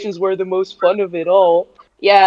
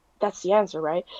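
put-on muttering under breath, quieter; 2 semitones lower, 11 dB quieter than usual. Retelling own reply to a random question: imitating muttering under breath. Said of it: "under my breath".

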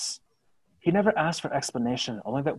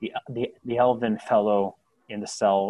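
usual speaking voice

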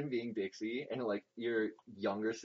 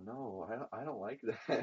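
mock voice on the verge of crying; 5 dB quieter than usual. Retelling what she said on a livestream: imitating someone almost crying. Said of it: "almost crying".

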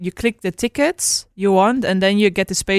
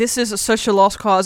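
usual speaking voice

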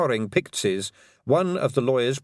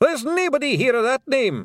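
shrill, very high-pitched shouting; 12 semitones higher, 3 dB louder than usual. Reading a story aloud, a character answers a summons, shouted. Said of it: "shouted Rob Anybody".

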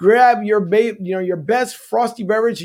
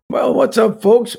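sleepy, groggy, creaky just-woke-up voice; 2 semitones higher than usual. Opening the show by greeting the audience: groggy voice. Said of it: "start off there with a groggy voice".

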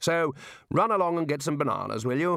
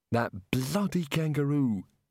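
sour, grumbling, muttered. Rincewind, just pulled upright by the crocodile, speaks, muttered. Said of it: "he muttered".

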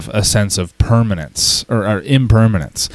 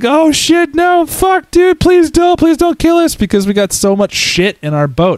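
play-acted shrill, very high-pitched screaming. Retelling a game where the biggest ship rams them at full speed, imitating them screaming. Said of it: "they're screaming".

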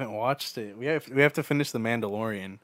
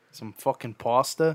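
put-on Boston accent. Riffing a dinner-time exchange with friends: put-on Boston accent. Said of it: "Every time I think of Boston accent".

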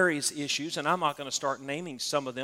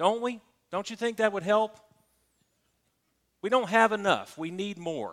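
sarcastic, pitched up; 6 semitones higher than usual. Speaking right after warning listeners it is sarcasm: sarcastic. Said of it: "you know I'm being sarcastic".

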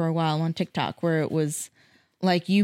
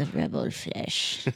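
breathy, whispered villain voice; 13 semitones lower, 6 dB quieter than usual. On a Doctor Who podcast, announce the episode title to the co-hosts in a Palpatine impression. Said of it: "That was my Palpatine impression".

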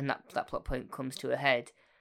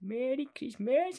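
put-on high-pitched elderly voice; 11 semitones higher than usual. Describing the very end of the animated Christmas Carol: Scrooge's old voice. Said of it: "in his old voice".

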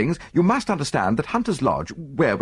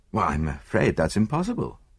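plain reading voice

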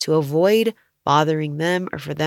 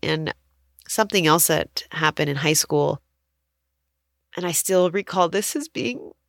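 tearful, crying speech, words pushed out through tears. Speaker recalling high school years, crying. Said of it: "sorry, I'm crying".

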